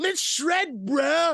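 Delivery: very high-pitched surfer-dude voice. Mocking how the usual Ninja Turtles talk: imitating a surfer-dude Ninja Turtle. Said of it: "You sound like the dude from the Goofy movie that loves the cheese".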